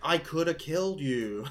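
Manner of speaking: mocking, exaggerated, hammy overacted delivery. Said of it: "way overacting that".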